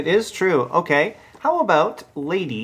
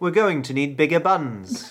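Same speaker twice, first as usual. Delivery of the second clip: put-on British accent; 2 semitones lower than usual. Asked to say the line in a British accent, speaker does: British accent. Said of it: "Can you say that in a British accent?".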